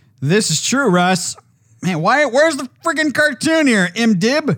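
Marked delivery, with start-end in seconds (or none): 1.8-4.6 loud, high-pitched yelling straight into the mic. Searching for a cartoon character's name, yelling into the mic. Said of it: "You're yelling into the mic there".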